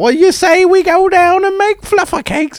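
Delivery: awful fake English accent, very high. Imitating how a man talks in his terrible English accent. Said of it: "he does a terrible English accent".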